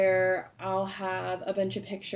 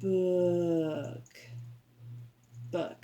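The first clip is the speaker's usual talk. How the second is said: book in slow snail talk, each letter sounded. A teacher showing how they say a word to students: sounding out every letter. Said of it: "sounding all of the letters out".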